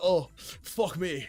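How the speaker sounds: put-on angry TV chef-style voice. Retelling what a TV chef says on cooking shows: Gordon Ramsay impression. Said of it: "That's what he says in the cooking shows".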